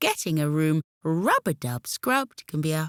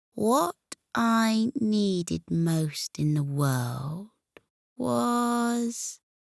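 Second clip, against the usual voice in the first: slow, deliberate, unhurried words with stretched was; 3 semitones higher than usual. Narrator reads a confused character answering the witch: speaking slowly. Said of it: "he said slowly".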